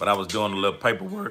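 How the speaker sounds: cracking, breaking voice. Telling viewers what kept them busy: voice cracking. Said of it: "Oh man, voice crack".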